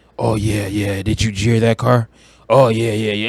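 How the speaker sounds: put-on wannabe tough-guy voice. Reviewing a movie, imitating Aaron Paul acting tough: imitating Aaron Paul's fake tough-guy voice. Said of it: "he talks like this".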